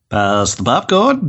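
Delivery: sinister, leering, creepy, predatory voice. Repeating own show intro line in the voice others mocked: creepy predatory voice. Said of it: "in my rapey voice".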